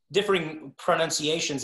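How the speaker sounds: plain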